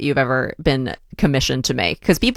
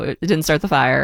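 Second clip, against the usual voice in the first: normal talking voice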